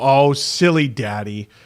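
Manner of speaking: low, playful, teasing ribbing tone. Retelling how his wife teases him after a mistake. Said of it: "my wife will go".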